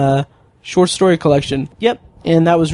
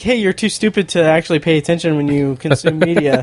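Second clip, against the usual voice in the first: usual speaking voice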